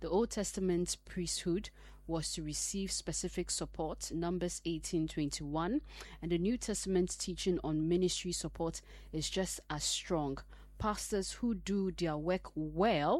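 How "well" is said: leaning hard on the word "well". Speaking to listeners, the speaker puts stress on 'well'. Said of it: "emphasis on well".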